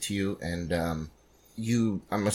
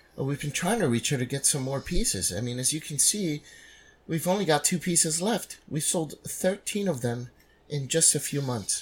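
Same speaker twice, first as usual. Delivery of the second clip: snobbish, snooty, pitched-up voice; 6 semitones higher, 3 dB quieter than usual. Voicing a gallery attendant greeting a visitor: snooty attendant voice. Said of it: "the snooty attendant".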